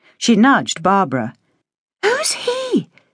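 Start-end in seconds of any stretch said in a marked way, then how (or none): 2.0-2.9 hushed half-whisper, pitched very high. Narrator voicing Penny nudging Barbara about a man on the towpath, half-whispered. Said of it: "she whispered".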